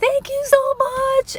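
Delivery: mock, very high-pitched, shrill, gushing scream. Retelling shouting thanks to a driver who paid the bill: retelling a scream. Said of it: "So I'm honking and screaming".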